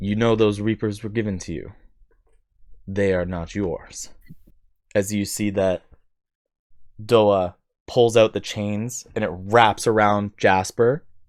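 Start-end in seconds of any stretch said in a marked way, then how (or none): 0.0-4.1 severe, stern, authoritative and commanding tone. After the narrator sets the scene, a character speaks up, stern voice of Victor. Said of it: "the stern voice of Victor comes out".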